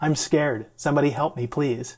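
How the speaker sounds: ordinary delivery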